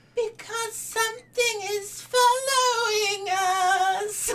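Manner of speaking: tiny, very high squeaky creature voice, us stretched long. A narrator voices the creature Jan answering why, in a tiny creature voice. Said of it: "Insists the creature in a tiny voice. Tiny voice".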